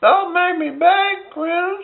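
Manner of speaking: very high-pitched, skin-crawling creepy voice. Doing Family Guy voices, answering Chris as he leaves, in a Herbert from Family Guy voice. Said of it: "Herbert, the pervert from Family Guy".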